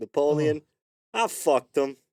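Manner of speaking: mock brash, loud, drawn-out yell out of nowhere. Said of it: "he would just randomly yell".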